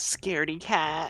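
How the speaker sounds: very high, jeering, taunting yell. Player in a game announces a yell at a fleeing man, yelled taunt. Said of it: "I'll yell".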